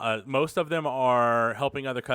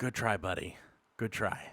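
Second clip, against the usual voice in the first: hushed, soft, close, private whisper; 3 semitones lower, 8 dB quieter than usual. Voicing a shopkeeper after a failed grab: whispering in character. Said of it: "he kinda whispers in your ear".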